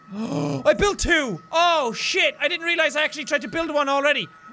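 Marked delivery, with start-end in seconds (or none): 0.1-2.3 surprised gasp, much slower. Streamer placing houses in a game, gasping in surprise.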